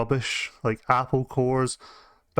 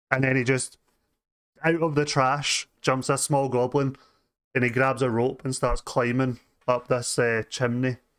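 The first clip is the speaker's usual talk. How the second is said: normal talking voice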